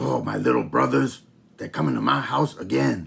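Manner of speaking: grumpy, angry, rough puppet pig voice. Showing how to voice a pig puppet as the big brother, angrier pig voice. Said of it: "Maybe he's a little angrier".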